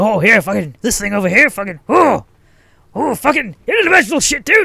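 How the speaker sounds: very high, loud, wild, manic, scattered rambling. Retelling how a chain-smoking man talked, imitating someone talking really fast. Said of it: "just like talking really fast".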